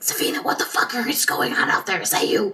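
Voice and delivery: hushed, quiet whisper. Calling another character on a cell phone in the game: whispering into a phone. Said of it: "but I'm gonna whisper into it".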